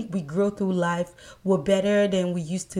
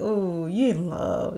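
feeble, weak, very slow, drawn-out voice. The speaker reenacts their own reply after being told I love you, retelling in a weak voice. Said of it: "my voice came weaker".

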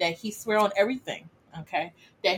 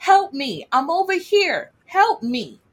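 put-on young man's screaming, high and loud; 8 semitones higher, 6 dB louder than usual. Retelling what some girls heard in the woods, imitating a young man screaming for help. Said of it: "sounded like a young man screaming".

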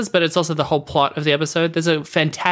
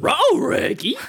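very high-pitched cartoon dog voice; 11 semitones higher than usual. Joking with a co-host while goofing around: Scooby-Doo voice. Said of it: "Like Scoob".

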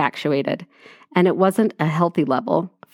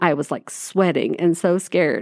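usual speaking voice

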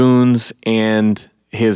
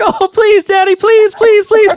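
very high, loud, begging plea; 6 dB louder than usual. Retelling a man buying a cage, the speaker voices his begging daughter: imitating a girl begging.

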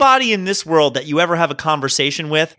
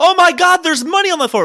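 put-on very high, rushed, excited childish screaming; 12 semitones higher, 4 dB louder than usual. Recounting finding money under a restaurant table as a kid: retelling a childhood scream. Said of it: "I start screaming".

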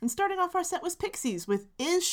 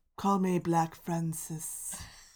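mock dramatic delivery; 7 semitones lower than usual. Doing the voice the hosts gave the man in their story, Frank's mock-dramatic voice. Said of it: "Very dramatic".

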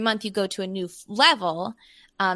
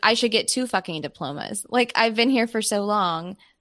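ordinary talk, nothing marked

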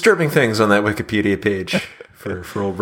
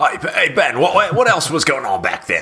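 put-on Australian accent, higher; 6 semitones higher than usual. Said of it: "Can you do it in a [name] accent?".

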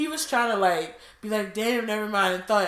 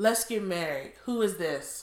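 slow reading aloud in own natural tone; 2 semitones lower, 5 dB quieter than usual. Reading aloud a text exchange for listeners, in own tone. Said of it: "I'm gonna read it in my tone".

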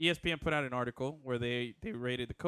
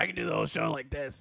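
put-on whiskey-and-cigar voice; 2 semitones higher, 4 dB louder than usual. Joking about doing the whole show in a Patrick Mahomes voice. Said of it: "with our Patrick Mahomes voice".

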